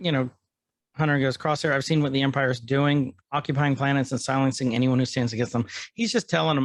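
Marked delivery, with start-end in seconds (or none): none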